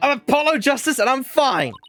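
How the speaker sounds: loud shout. Showing a partner a voice workout before a trial, going first, loud shout. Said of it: "shouting, I'm fine, in a loud voice".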